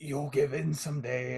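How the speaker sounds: very weak, feeble, faint, soft little voice. Retelling a story where a creature speaks from the corner, imitating a very weak voice. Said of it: "the creature just says very weakly".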